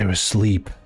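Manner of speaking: whispering. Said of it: "I'm gonna whisper to Zyra".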